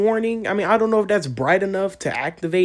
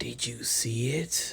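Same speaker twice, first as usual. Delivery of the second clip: slow, unhurried whisper; 8 semitones lower, 12 dB quieter than usual. Recalling the line the narrator usually says: imitating Nuke. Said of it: "usually he's like".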